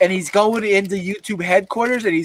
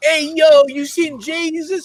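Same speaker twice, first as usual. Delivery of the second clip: put-on Italian mobster voice, much higher, slower; 8 semitones higher than usual. Retelling a video where a man plays a mafioso, imitating an italian mafioso. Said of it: "He's like some Italian".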